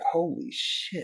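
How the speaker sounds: soft, slow, awed gasp. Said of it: "And I just was like".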